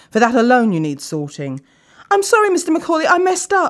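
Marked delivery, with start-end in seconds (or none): 2.1-3.7 very high, cried-out words. A worker apologizes to his boss after the boss snaps at him: cried out. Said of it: "Dan cried out".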